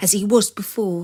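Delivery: ordinary delivery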